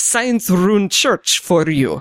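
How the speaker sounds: put-on Russian accent. Playing a character on a gaming cast, the speaker slips in a fake russian accent. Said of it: "I've done a Russian accent on".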